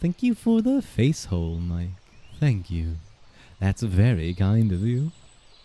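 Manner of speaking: put-on vampire voice, laid on thick. Recalling the vampire voice to thank mike, in vampire voice. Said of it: "Mike redeemed the vampire voice".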